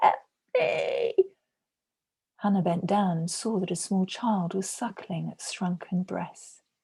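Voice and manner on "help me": harsh, scratchy, sharp, rasping cry. Reading a story where a starving woman in the street calls out: sharp, rasping voice calling out. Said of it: "A sharp, rasping voice called out".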